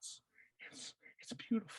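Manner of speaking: hushed, whispered, weeping, tearful voice. Retelling a movie scene where a character tastes beer: imitating someone crying. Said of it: "he's crying".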